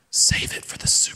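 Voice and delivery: soft, hushed, secret whisper. Retelling a voice heard while choosing what to wear: imitating a whisper. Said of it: "whisper in my ear".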